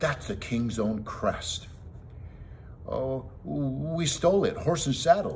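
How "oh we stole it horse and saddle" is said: desperate, high-pitched, blurted-out words. A companion cuts in after the big man spots the king's crest: desperately. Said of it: "Jimmy put in desperately".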